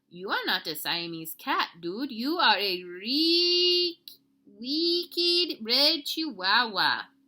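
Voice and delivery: very slow put-on Spanish accent, "reek" drawn out. Narrator reads the kitty boy talking to his reflection, in his very best Spanish accent. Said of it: "using his very best Spanish accent".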